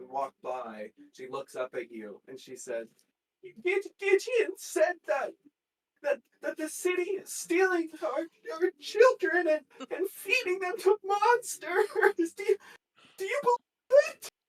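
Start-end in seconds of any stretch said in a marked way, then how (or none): 3.4-14.3 very high, loud sobbing speech, crying through words. Narrator voicing a woman who looks up at a passerby, sobbing while talking. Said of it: "she's sobbing".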